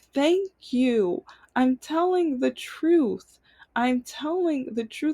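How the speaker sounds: slow, crying, tearful pleading tone. Speaker recalls pleading in front of their dad, imitating own tearful plea. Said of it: "I just remember in tears".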